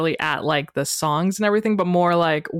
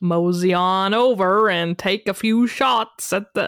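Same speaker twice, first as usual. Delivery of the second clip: terrible put-on Western accent, very slow drawl. Describing the park's shooting galleries to listeners: terrible put-on accent. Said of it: "that was a terrible accent".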